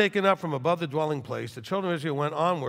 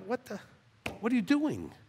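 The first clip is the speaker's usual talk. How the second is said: very slow, drawn-out, swooping, high pitch; 8 semitones higher, 7 dB quieter than usual. Imagining how the one who invented language would talk, the speaker does his voice. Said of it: "it'd be more like".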